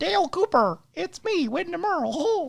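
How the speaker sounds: very high, muddled, squeaky cartoon voice. Imitating a call to Dale, a failed Kermit or Mickey Mouse voice. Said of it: "this voice right here".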